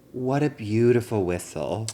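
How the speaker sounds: ordinary talk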